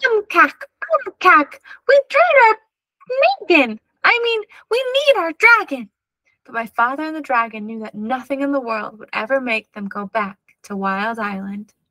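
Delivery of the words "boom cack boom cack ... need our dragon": very high, tiny, excited screaming voice. Reading a story aloud as a tiny voice screams for the dragon: tiny, excited scream. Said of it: "tiny, excited voice scream".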